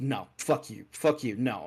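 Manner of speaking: usual speaking voice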